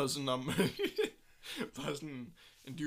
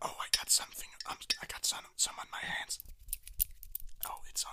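mock caring, tender voice, quieter. Retelling a boyfriend roleplay video for the others: imitating a boyfriend roleplay video. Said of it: "og så er han sådan".

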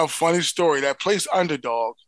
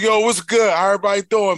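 put-on Philly accent, higher and louder; 5 semitones higher, 5 dB louder than usual. Retelling a phone call ordering food: imitating own Philly speak. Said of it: "I just go into my native tongue, which is, you know, my Philly speak".

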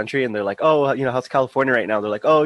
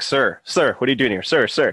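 put-on teasing tone, faster. Speaker retells how they troll every old person they see; retelling trolling an old man. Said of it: "I troll them like".

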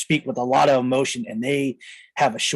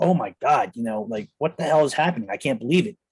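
put-on crying voice. Retelling own words after being rescued from a beating: imitating own past crying. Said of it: "I'm just, like, crying".

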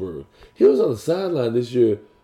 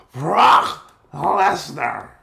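put-on wrestling announcer voice, higher; 5 semitones higher than usual. Announcing a wrestling match the way another speaker suggested: Vince McMahon voice. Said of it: "You gotta say it like Vince McMahon".

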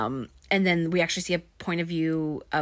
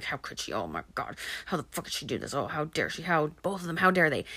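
mock angry grumbling; 3 dB quieter than usual. Retelling a film scene where a character paces and grumbles: imitating angry grumbling. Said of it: "pacing and grumbling and being like".

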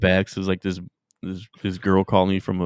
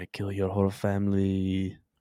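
hushed, demonic, satanic put-on voice; 6 dB quieter than usual. Recounting a woman's threat to kill the family, imitating her satanic voice. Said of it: "she had like that like satanic voice".

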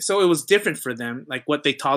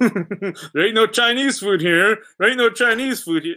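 pitched-up muttered aside; 7 semitones higher, 3 dB louder than usual. Retelling what men in a pub said as they walked in: imitating muttering under breath. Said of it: "kinda under the breath".

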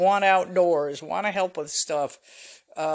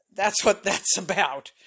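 plain

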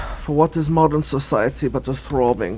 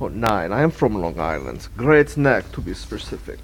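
low, put-on European accent; 4 semitones lower than usual. A character asked if they are european answers, in a fake european accent. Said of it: "but but your accent?".

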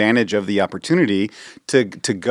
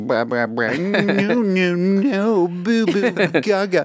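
put-on very slow, high, drawn-out baby babble; 8 semitones higher than usual. Imitating a baby talking age babbling: imitating baby babble. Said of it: "if that baby's like".

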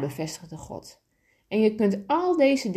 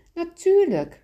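chuckling, small laugh, slightly higher pitch; 9 semitones higher, 4 dB louder than usual. Reading a story, God answers the little soul's question; chuckling. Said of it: "en God grinnikte".

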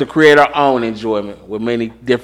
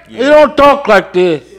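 put-on Cuban accent, pitched very high; 13 semitones higher, 3 dB louder than usual. Discussing an actor who played a Cuban, mocking how he talks: imitating a Cuban accent. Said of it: "but he was playing a Cuban".

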